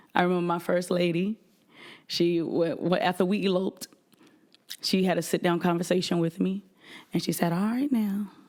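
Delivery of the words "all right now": put-on soft-spoken woman's voice. Retelling advice from the first lady, imitating her soft speech. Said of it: "she would talk real soft".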